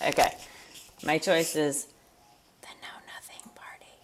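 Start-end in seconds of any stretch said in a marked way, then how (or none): 2.6-3.9 soft, hushed, ASMR-style whisper. Asked for a choice, speaker gives the answer, ASMR-style whisper. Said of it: "Some unexpected ASMR".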